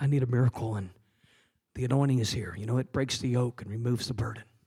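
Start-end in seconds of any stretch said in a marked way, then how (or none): 0.0-0.7 hushed whisper. Showing what someone in the prayer line might say: whispering. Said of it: "just kinda whispering like".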